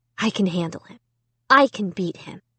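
ordinary delivery

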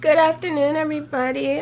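groggy, just-woke-up morning voice. Speaker greets everybody, having literally just woken up; just-woke-up voice. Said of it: "Sorry about my voice. I literally just woke up".

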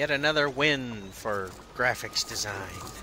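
ordinary delivery

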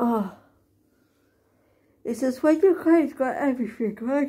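yawning while speaking. Talking about a client who has loads of stuff, yawning while speaking. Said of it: "Sorry for yawning".

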